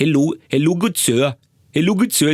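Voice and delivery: Indian accent on English. Demonstrating to an audience how a certain type of person supposedly sounds while speaking; Indian accent. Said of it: "the Indian guy sounds like this".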